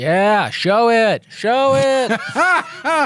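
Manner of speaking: high, loud, excited cheering.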